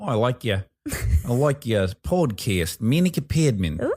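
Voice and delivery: put-on friendly New Zealand accent. A podcast host imitates New Zealanders praising the co-host, imitating a New Zealand accent. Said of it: "Also in New Zealand, they'd be like".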